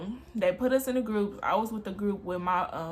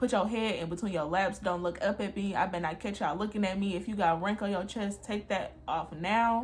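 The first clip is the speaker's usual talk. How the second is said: usual speaking voice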